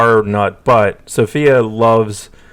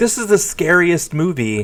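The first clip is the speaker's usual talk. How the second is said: mock full-on high screaming outburst; 7 semitones higher, 3 dB quieter than usual. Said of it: "screaming at me".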